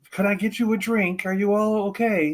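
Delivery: even, polite, calm, methodical robot voice. Imagining a murder droid speaking calmly, like TC-14 greeting you: calm methodical TC-14 droid voice. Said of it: "would be like T C fourteen greeting you".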